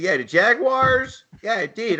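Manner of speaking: put-on Philadelphia accent, high and slow. Asked who they want, answering in their best Philly accent. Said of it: "I'll just do my best Philly accent".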